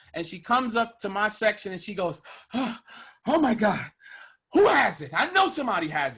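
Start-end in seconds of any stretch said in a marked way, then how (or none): 2.6-5.1 acted breathless, winded, out-of-breath gasps. Retelling a ride worker's words after climbing the stairs: imitating someone out of breath. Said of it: "she's out of breath, she's winded".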